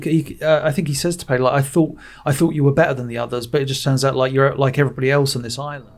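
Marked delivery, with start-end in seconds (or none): none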